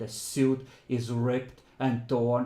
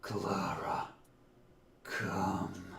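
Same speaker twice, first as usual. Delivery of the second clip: low, hoarse, rasping voice; 5 semitones lower, 7 dB quieter than usual. Running the game, the speaker voices someone calling Clara in a hoarse voice. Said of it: "In a hoarse voice".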